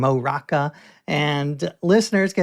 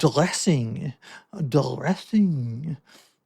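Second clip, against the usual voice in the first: put-on French accent on the word dressing; 4 dB quieter than usual. In an accent-guessing game, saying a word for the other to guess, French accent.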